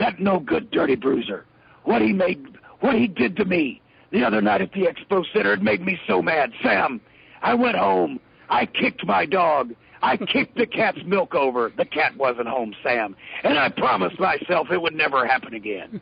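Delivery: rough, growly wrestling promo rant voice. Recounting a wrestler's promo to announcer Sam, in a growly Ox Baker voice. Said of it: "he'd get that growly voice".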